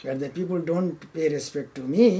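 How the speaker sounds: ordinary talk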